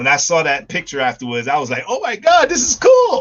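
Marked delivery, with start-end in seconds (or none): 1.9-3.2 play-acted, very high, awestruck, excited gush. Retelling their reaction to seeing a picture afterwards, reenacting own excited reaction. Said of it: "I got really excited".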